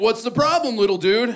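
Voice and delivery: easygoing, laid-back surfer dude voice. Retelling what an emergency doctor said: imitating a surfer dude. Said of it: "he is talking to me like a surfer".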